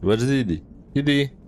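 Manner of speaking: calling out loudly, pitched high.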